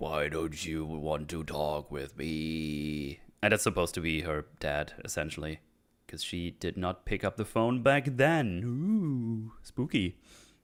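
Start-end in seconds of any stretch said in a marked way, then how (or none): 0.0-3.2 strange, warped, low, slow voice, "me" drawn out. Her dad, essentially, speaks to her when she picks up the ringing phone, in a weird distorted voice. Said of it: "a weird distorted voice like".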